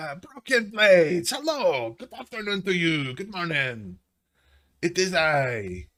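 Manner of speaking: high hobgoblin character voice, called out. Voicing a hobgoblin who greets the party from behind: hobgoblin character voice. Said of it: "Is that the hobgoblin?".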